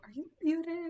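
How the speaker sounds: high, playful voice. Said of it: "be like".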